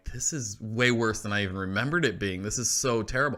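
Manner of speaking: usual speaking voice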